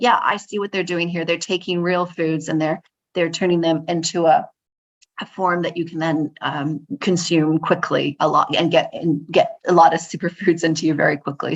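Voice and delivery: ordinary talk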